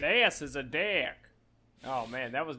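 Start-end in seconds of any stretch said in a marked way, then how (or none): 0.0-1.1 fake Australian accent, quieter. Joking about how an Australian version would go, bad Australian accent. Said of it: "the least Australian of any voice".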